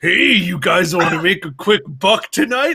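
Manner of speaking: put-on deep, low cartoon heavy's voice. Telling a story about hanging out at Storybook Circus, doing a Pete voice. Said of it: "I'm better at doing a Pete voice".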